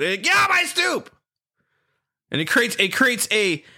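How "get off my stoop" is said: high-pitched, pushed out, aggressive delivery. Comparing a security company to a cartoon kid: Stoop Kid impression. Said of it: "the stoop kid".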